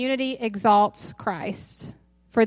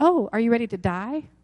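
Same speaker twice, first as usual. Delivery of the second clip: ordinary talk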